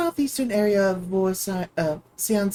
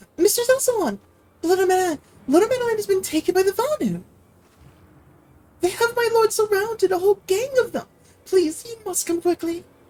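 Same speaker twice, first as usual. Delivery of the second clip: put-on very high clumsy child voice; 11 semitones higher than usual. Player reading a game cutscene line aloud: childlike voice, done poorly. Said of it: "I can't really do that voice too well. Because that has to sound more like a child".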